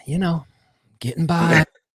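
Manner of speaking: put-upon, sighed-out tone. Retelling what a pregnant acquaintance answered when asked how she was: imitating a weary sigh.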